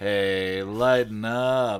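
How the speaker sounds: drawling, drawn-out delivery. Max responds to Guy's snarled threat, drawling. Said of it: "Max drawled".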